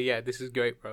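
normal talking voice

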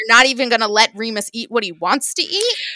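put-on angry outburst. Retelling a reaction to a date in a story: imitating own angry reaction. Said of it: "I got angry just reading that".

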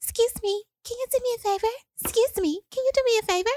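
tiny, little, light, very high-pitched voice. Retelling how a woman on the plane asked for a favor, little light voice. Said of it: "I hear this little light voice".

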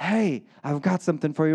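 put-on whisper. Acting out God quietly offering people something: imitating God whispering. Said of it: "God comes in and whispers".

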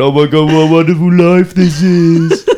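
mock tearful, joyous crying exclamation. Retelling sitting at sunrise listening to music: imitating own joyful crying. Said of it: "I was actually crying, like, going".

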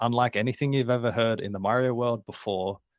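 normal talking voice

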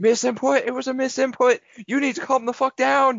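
shrill, very high scream at full voice. Retelling a streamed game where a shot player screamed, retelling a scream. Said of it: "he just starts screaming".

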